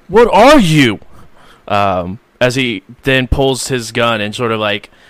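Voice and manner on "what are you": very loud, high-pitched yelling. Game master voicing one character yelling at another, yelling. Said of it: "Sarge will look over to Karma and just yell".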